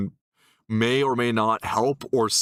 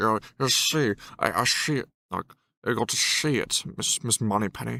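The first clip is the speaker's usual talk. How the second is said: put-on Scottish accent, classic film spy style; 3 dB quieter than usual. Showing how saying the word sounds to him: Sean Connery voice. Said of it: "I sound like, uh, Sean Connery".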